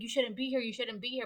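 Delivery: mock-scared man's voice. Retelling how a scared man warned the group: imitating a scared man. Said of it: "He was scared".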